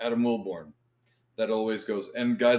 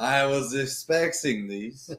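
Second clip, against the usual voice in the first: very slow, clumsy, bad fake Mexican accent; 3 semitones higher than usual. Repeating a stumbled word as a joke, bad put-on mexican accent. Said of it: "You sounded more, like, German than Mexican".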